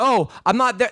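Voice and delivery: normal talking voice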